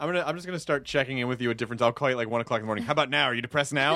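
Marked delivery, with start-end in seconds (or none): none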